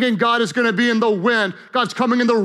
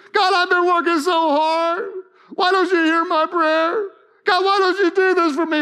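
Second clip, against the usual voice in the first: put-on high, whiny, complaining voice; 7 semitones higher than usual. Speaker acts out complaining to God in prayer, in mock-whiny prayer voice. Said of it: "whiny voice?".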